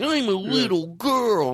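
put-on very slow, high, childish little-girl voice. Mocking old sketch comedy: imitating an adult doing a kid's voice. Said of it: "seeing an adult do a kid's voice".

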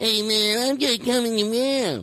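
very high, corny, badly done eighties character voice. Showing how 1980s shows did characters: worst 1980s character voice. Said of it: "This is the worst nineteen eighties character".

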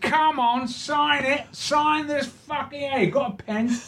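very high-pitched put-on Cockney accent. Retelling a cockney stranger asking the speaker to sign something, in a put-on cockney accent. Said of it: "this Cockney comes in".

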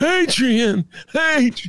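squeaky, very high-pitched put-on movie-star voice. Doing a Stallone imitation after a Rocky trivia answer. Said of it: "That's my Stallone imitation".

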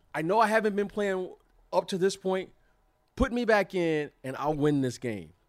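loud, high voice full of conviction. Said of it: "He said it with such conviction".

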